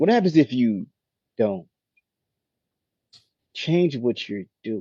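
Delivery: halting pause placed just before 'don't'. Pointing out his own pausing while asking a question: pause before don't. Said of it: "Now notice I'm pausing".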